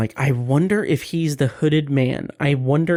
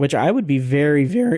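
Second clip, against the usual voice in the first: voice cracking and breaking. Musing about the show's timelines for the rest of the season, voice cracking. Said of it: "my voice cracked so terribly".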